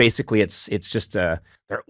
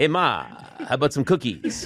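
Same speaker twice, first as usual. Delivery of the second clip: put-on little kid voice with a film star's manner; 3 semitones higher than usual. Retelling a cartoon kid who is a version of Charles Bronson: Charles Bronson voice. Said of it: "everyone's a version of Charles Bronson".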